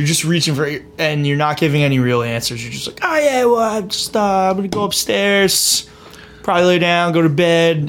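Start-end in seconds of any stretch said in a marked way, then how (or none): 3.0-7.9 put-on slow, high, drunk teenager voice. Describing someone dodging questions, imitating a drunk high school kid who got caught. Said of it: "talks like a like a drunk high school kid who just got caught".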